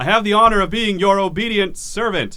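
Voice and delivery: amplified booming voice, super loud. Voicing a character who addresses the caldera: magically amplified booming voice. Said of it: "super loud as he says this".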